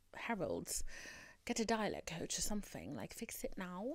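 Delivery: hushed aside.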